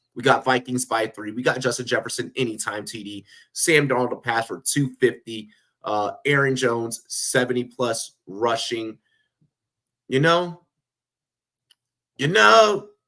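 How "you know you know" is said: loud, high-pitched, hyped-up, emphatic delivery. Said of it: "In my best D M X voice".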